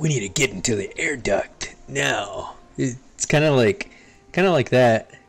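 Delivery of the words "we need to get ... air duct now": raspy put-on voice. Showing another speaker how Snake sounds: Snake voice. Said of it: "I'll show you".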